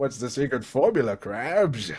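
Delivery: polished, refined, sophisticated put-on cartoon voice. Explaining how he voices the character with more sophistication: Plankton voice. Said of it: "he sounds a bit more sophisticated with it".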